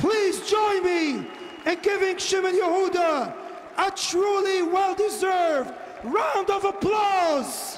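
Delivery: stirring, rousing tone.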